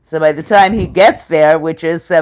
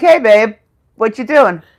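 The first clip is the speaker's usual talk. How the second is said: bright, happy, cheerful tone, acted and pitched up; 6 semitones higher than usual. Retelling a call where the husband answers: imitating a happy greeting. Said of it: "he answers happily".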